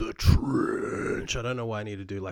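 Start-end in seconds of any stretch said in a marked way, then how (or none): 0.0-1.4 loud, rough, growled metal-style roar. Naming a film title in a list of topics: roaring the words. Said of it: "a roar every time I say that".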